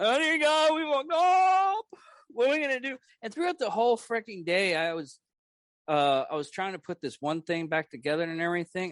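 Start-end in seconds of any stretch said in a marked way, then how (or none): 0.0-3.0 mock crying, very high, tearful voice. Retelling a talk with a friend after breaking the furniture: imitating own past crying. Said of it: "We were holding each other crying".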